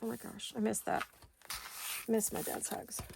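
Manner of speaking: whispered, hushed, on the edge of crying. Speaker, missing their dad's hugs, is about to cry: near tears. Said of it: "I'm gonna cry".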